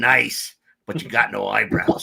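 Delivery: rough, creaky gravel voice. Retelling what Joe said after the blast knocked them back, in Joe's gravelly voice. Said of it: "with that gravelly voice he had".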